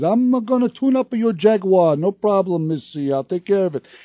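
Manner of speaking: put-on Italian-accented speaking voice. The speaker quotes a man from the shop where she worked, in John's Italian accent. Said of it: "the guy had an Italian accent".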